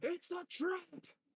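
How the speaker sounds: shrill, very high, alarmed yell. Voicing a character who was just untied, warning the players: shouting a warning. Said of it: "he literally shouts to you".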